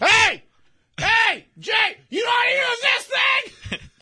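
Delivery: very high, loud, drawn-out yelling. Imagining a man on the sidelines struggling with a flip phone, retelling a yell. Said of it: "he's yelling around".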